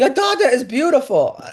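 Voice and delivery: put-on heavy, thick Latin American Spanish accent, pitched high. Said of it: "I hear in a thick accent".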